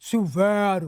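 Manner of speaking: put-on muffled mouth-full voice. Retelling a stranger's answer from behind a door: imitating a voice with mouth full. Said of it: "com a boca cheia".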